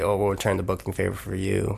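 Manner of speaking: ordinary talk, nothing marked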